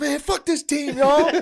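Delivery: furious, high, very loud rant.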